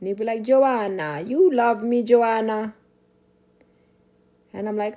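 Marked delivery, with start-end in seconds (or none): 0.4-2.7 loud, very slow, very drawn-out put-on Italian accent. Recalling pretending to be Italians for the day, the speaker quotes a childhood friend: fake Italian accent. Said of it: "we would talk in Italian accent".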